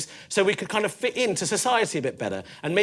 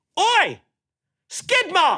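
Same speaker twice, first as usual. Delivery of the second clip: mock, very high, sudden shrill playground jeering shout; 12 semitones higher, 6 dB louder than usual. Retelling a schoolmate calling out on the playground: imitating Ben shouting. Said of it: "Ben just shouts out".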